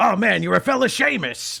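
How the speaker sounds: creaky voice pushed very high, loud and rough. Imitating an actor's line from The Big Lebowski: Jon Polito impression. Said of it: "he talks like this".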